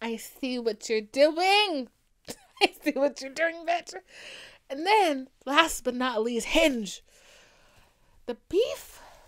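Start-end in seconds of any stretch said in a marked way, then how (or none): 8.2-9.0 voice breaking, cracking mid-word. Reaching the last dating app on the list: voice cracking. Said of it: "My voice just cracked real quick".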